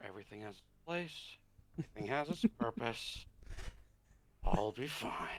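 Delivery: quiet murmur, said softly to herself. Game master voices a woman saying this to herself, like a little prayer. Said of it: "like she's saying this to herself, almost like a little pre- pl- prayer".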